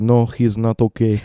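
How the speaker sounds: put-on Russian accent, spoken very slowly. Speaker retells his dad's answer about Russell: imitating dad's Russian accent. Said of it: "in his Russian accent".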